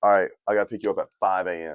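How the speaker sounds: plain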